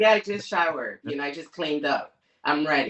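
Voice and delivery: ordinary talk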